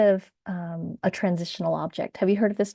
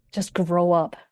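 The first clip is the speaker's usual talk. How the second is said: mock judgmental tone. Quoting how people scold themselves over keepsakes: imitating a judgmental tone. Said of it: "said in a very judgmental".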